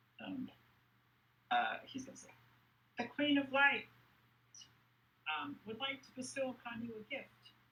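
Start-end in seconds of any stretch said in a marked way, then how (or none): 3.0-7.5 tiny, very high, little pixie character voice. Voicing a little pixie character's lines, in a little pixie voice. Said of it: "in his little pixie voice".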